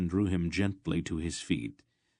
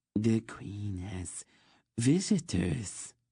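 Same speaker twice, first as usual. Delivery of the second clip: lilting, musical, sing-song announcer voice; 3 semitones higher than usual. Reading a story aloud, a kneeling eunuch announces visitors: sing-song voice. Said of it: "announced in a sing-song voice".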